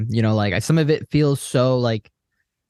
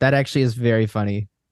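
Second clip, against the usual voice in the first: ordinary talk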